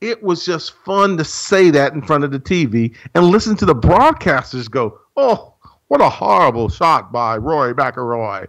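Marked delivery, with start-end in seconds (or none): 5.2-8.5 terrible, butchered fake English commentator accent. Imitating tv broadcasters reacting to a horrible shot, bad english accent. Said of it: "that was a terrible version of an English accent".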